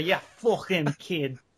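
put-on sudden Scottish accent. Repeating a video character's line: weirdly scottish accent. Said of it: "while he turns weirdly Scottish there".

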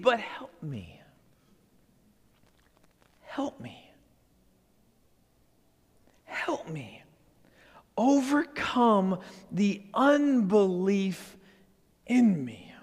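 whispered voice.

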